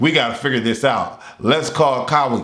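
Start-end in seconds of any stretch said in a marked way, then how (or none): none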